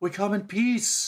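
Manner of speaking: very high, drawn-out, slow pleading creature voice. Voicing a wounded snake man looking with pleading eyes: pleading snake man voice. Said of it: "he looks with pleading, pleading eyes".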